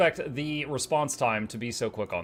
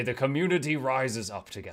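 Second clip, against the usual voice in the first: put-on nature documentary narrator voice. Describing ants covering a creature in an anthill: David Attenborough voice. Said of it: "David Attenborough voice".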